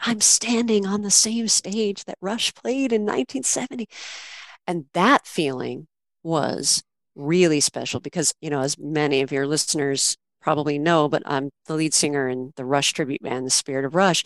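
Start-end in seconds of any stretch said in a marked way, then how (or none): 0.0-3.9 put-on whisper, much higher pitch. Recalling being filmed on a stage by a husband, retelling a whisper. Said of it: "I'm whispering and I'm like".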